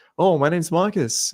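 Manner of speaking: Marcus rising at the end, upspeak. Explaining how guys sound in front of a girl, demonstrating rising question-like intonation. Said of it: "it like goes up and you just sound like you're asking a question".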